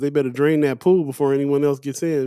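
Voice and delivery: ordinary talk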